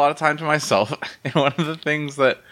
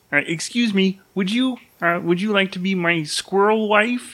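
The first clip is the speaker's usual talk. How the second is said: put-on frog puppet voice, higher; 6 semitones higher than usual. Retelling how their brain talks to itself, in Kermit the Frog voice. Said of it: "talk to itself out loud in Kermit voice".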